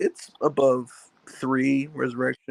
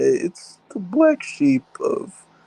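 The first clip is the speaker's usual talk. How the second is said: voice cracking, pitched up, slow, very drawn out; 10 semitones higher than usual. Calling a film the odd one of its franchise: voice cracking. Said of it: "I don't know why my voice cracked".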